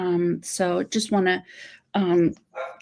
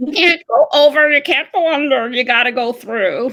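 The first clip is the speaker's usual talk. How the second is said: loud, pitched-up put-on voice; 6 semitones higher, 7 dB louder than usual. Explaining how people avoid hurt feelings: Grover voice. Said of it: "I always use my Grover voice".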